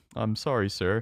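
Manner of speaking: mock-sheepish tone. Retelling being caught with napes, the speaker repeats his apology to a man; retelling a sheepish apology. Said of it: "I'm slinking the napes back".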